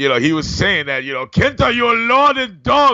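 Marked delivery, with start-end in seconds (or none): 1.2-3.0 enraged, angry, deliberate scolding, pitched up and slow. Retelling what an angry friend said on Skype: imitating Mister Sato. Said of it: "my Sato impression is not too great".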